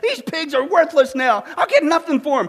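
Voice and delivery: yelling in a rage. Telling a joke, the farmer finds injured pigs: farmer yelling in a rage. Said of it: "he yells".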